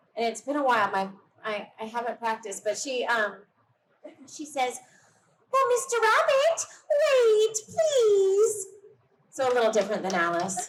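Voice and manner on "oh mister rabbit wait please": very high-pitched, slow cartoon voice. A fan demonstrates how they would voice Alice for Disney, in Alice voice. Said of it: "if I had the chance to voice Alice".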